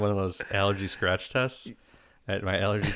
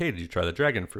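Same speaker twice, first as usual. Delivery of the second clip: plain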